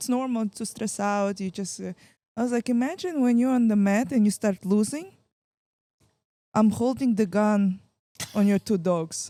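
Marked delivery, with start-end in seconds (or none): 2.7-9.3 put-on Russian accent. Retelling what they told her about being on the mat, in a put-on Russian accent. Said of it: "With an Rus- Russian accent".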